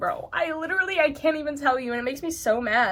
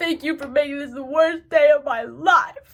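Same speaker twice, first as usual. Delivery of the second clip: put-on crying voice, louder; 2 semitones higher, 4 dB louder than usual. Retelling a childhood outburst at a classmate in class: imitating herself crying. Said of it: "I'm crying".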